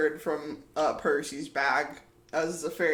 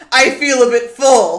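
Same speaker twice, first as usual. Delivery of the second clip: loud, slow, drawn-out sulky fairy voice; 8 semitones higher, 16 dB louder than usual. Voicing a fairy who crosses his arms at the others: sulky fairy voice. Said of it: "turns around and crosses his arms".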